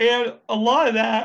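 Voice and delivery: words stretched by a yawn. A speaker going over coupon savings after little sleep, talking through a yawn. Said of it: "I'm sorry for yawning".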